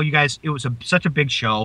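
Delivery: plain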